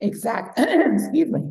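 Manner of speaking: croaky, failing voice, high and swooping. Speaker's voice suddenly gives out mid-conversation, losing voice. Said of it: "Losing my voice all of a sudden".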